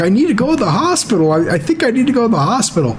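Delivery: high, weepy, panicky, tearful crying voice. Retelling a brother's plea to go to the hospital: imitating someone crying. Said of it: "he's just crying and crying".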